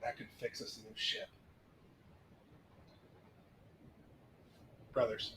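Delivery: hushed stage whisper, close in the ear. A player's character turns to whisper into a companion's ear, in a stage whisper. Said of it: "turn and whisper into Zir's ear".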